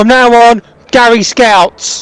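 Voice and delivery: shouted words. Narrating what a companion suddenly shouts, retelling a shout. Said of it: "And then he just shouts".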